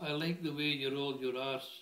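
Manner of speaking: ordinary talk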